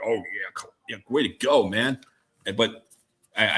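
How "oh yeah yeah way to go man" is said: put-on chuckling, laughing approval. Retelling his first reaction to a story on the radio, retelling chuckling along. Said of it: "I started chuckling".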